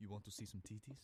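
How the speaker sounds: put-on thick Nigerian accent. Retelling what a man trying to get them into a club said, thick Nigerian accent. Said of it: "thick Nigerian accent".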